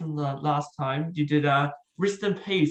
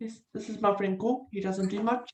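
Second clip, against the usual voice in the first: put-on New Zealand accent, higher pitch; 5 semitones higher, 3 dB quieter than usual. Showing an impression of a movie character: Korg voice. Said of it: "built in with the accent you got there".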